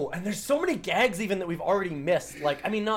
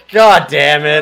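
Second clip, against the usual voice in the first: put-on exasperation, louder and lower in pitch; 3 semitones lower, 18 dB louder than usual. Acting out the fed-up mom from the scene: mock-exasperated. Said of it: "She's exasperated".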